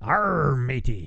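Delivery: very slow, low, botched pirate voice. Radio host on Talk Like a Pirate Day, attempting a bad pirate voice. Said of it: "Today is actually National Talk Like a Pirate Day".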